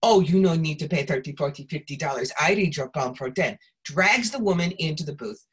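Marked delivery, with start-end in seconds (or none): 0.0-3.6 fake, put-on Russian accent. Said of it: "they do that Russian accent".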